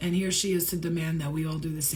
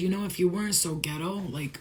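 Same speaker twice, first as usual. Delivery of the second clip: ordinary talk, nothing marked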